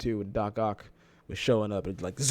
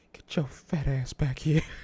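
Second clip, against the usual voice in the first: sinister, creepy put-on voice; 3 semitones higher than usual. Recalling a Family Guy clip where Chris walks away, in Herbert voice. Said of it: "that's my default pedophile voice".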